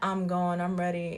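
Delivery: ordinary delivery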